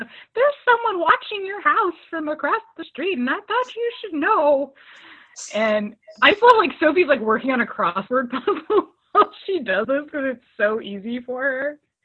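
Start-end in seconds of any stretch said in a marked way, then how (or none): 0.0-4.7 put-on high little old lady voice. Recounting Sophie's phone call about someone watching the house: little old lady voice. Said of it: "use a little old lady voice".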